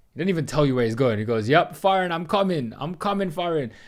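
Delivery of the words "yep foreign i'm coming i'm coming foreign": put-on Jamaican accent, full of excitement. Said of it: "the Jamaican guy".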